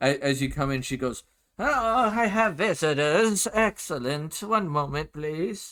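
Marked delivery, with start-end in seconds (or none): 1.6-5.7 put-on high, slow, old elven grandmother voice. Voicing an old elven woman greeting visitors: grandmotherly old elven woman voice. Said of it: "the grandmotherly type".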